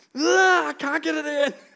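high-pitched, loud, exasperated frustrated yell. Retelling how he got frustrated building something at the table, imitating frustrated yelling. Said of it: "And he just starts yelling".

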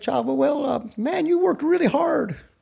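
put-on raspy, high-pitched voice with Texas accent. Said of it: "he's got that raspy Texas voice".

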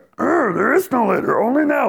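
very high-pitched, affected, put-on sage character voice. Repeating a personal motto to oneself: Yoda voice. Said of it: "I literally do it in a Yoda voice".

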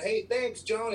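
high-pitched, loud calling-out yell. Recalling calling out from the crowd to a woman in a van, retelling a yell. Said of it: "I yelled".

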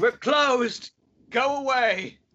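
put-on very high-pitched elderly voice shouting out. Voicing the coffin maker inside the shop answering a knock, elderly voice shouting. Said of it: "You hear an elderly voice shout".

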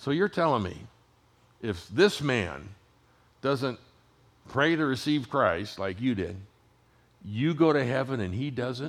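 mildly sarcastic, pointed tone, acted out. Retelling a challenging question about a pilot father: imitating a sarcastic tone. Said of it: "she was a little sarcastic at this point".

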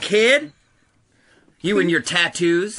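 slow, high, drawn-out hollered yell. Acting out a prison riot, taunting a new inmate: yelling. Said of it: "Please stop yelling at me".

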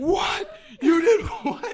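very high, very loud, shrill, drawn-out scream. Retelling how a manager reacted after hanging up the phone, retelling a manager screaming. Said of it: "starts screaming at me".

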